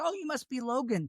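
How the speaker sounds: very nice, sweet, high and friendly. Retelling how a listener greeted the son: imitating someone saying it very nicely. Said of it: "in a very nice way".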